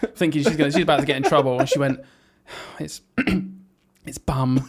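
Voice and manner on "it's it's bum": hushed, halting, nervous little stage half-whisper. Retelling the worried pupil finally telling the word: imitating a pupil half-whispering. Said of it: "came right in and whispered to me".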